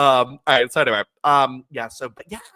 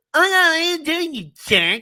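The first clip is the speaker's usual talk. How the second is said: very high-pitched, peeved, protesting tone. Retelling a backstage segment, imitating Candice Michelle. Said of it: "That's exactly how she sounded".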